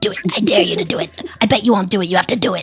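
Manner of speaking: low, full-on gremlin creature voice. Speaking for the Utah werewolf, in a full-on gremlin voice. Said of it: "Full on gremlin voice".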